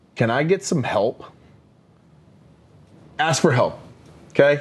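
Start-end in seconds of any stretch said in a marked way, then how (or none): none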